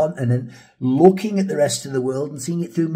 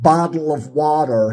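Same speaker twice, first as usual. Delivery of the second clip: American accent, "bottle" and "water" with soft d for t; 3 dB louder than usual. Showing how an american says bottle of water: american accent, soft d sounds. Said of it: "How would an American say bottle of water? ... they'd go".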